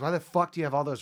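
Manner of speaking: mock angry ranting outburst. Retelling how a man reacted on stage, imitating someone freaking out. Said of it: "Tony freaks out on stage".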